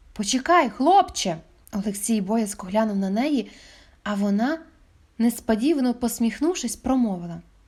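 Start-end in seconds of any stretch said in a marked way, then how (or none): 0.2-1.4 sudden exclamation, calling out. Narrator reads a cashier calling after a boy who is about to leave, exclaiming. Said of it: "касирка вигукнула".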